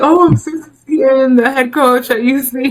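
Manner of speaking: high, loud, German-accented voice.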